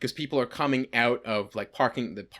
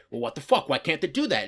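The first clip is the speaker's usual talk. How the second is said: annoyed, pissed-off man ranting; 3 semitones higher than usual. Retelling a man on his phone walking past, imitating an angry man. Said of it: "he's just pissed off".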